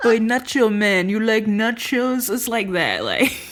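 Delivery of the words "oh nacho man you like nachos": slow, hammed-up, put-on French Canadian accent. Retelling how people talk to a guy they bully: french canadian accent. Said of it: "with a French Canadian accent".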